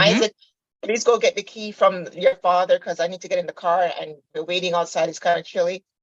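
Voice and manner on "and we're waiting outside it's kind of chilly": normal talking voice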